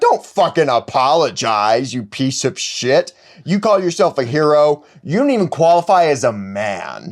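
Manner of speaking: put-on confrontational tirade. Retelling a comic scene where Oliver gets in Hal's face: imitating Oliver angrily confronting someone. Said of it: "Oliver immediately gets in his face".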